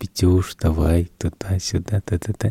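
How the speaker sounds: very gentle, soft, kind, coaxing voice.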